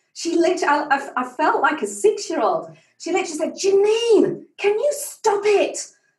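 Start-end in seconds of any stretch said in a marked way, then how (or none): 3.6-5.8 put-on cross, angry, high, deliberate voice. Retelling how a champion surfer got angry: imitating someone angry. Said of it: "she got so angry with me".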